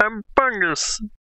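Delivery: very high, put-on kitty voice. Answering a request to do the voice of a drawing: Bungus voice. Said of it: "That's the voice, I think".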